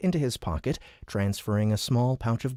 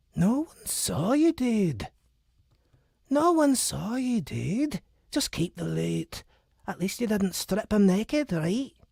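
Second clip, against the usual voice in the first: put-on Scottish accent, very high pitch; 10 semitones higher than usual. Reading the screen's reply to the new thief, in a Scottish accent. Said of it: "it's a Scottish accent".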